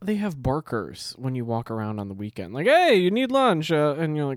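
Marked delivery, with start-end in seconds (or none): 2.7-3.7 very high, very loud, shrill fake Italian accent. Imitating a barker calling out to people walking by, in a bad fake Italian accent. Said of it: "That's not an Italian accent".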